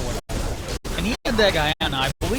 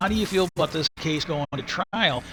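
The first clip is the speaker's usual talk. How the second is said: ordinary talk, nothing marked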